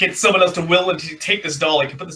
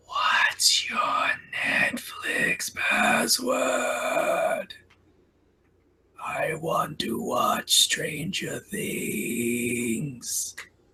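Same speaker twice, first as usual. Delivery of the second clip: very slow, eerie, ghostly put-on whisper; 8 semitones higher, 7 dB quieter than usual. Imagining a creepy person in a dark corner asking something: put-on creepy whisper. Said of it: "that's gonna whisper".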